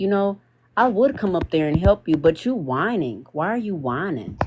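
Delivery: dead-calm, very calm, mocking trolling tone. Retelling trolling a grown man who was whining, in a retold very calm tone. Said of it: "In the calmest tone".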